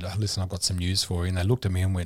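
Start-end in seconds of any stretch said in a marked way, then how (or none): none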